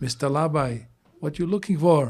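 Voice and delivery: put-on Chinese accent. Retelling what the gardener said on spotting him, in a chinese accent. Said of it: "he says in his Chinese accent".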